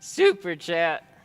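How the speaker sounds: high voice cracking on the words. A streamer reading out a viewer's super chat, voice cracking. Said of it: "did my voice just crack?".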